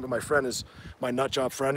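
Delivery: plain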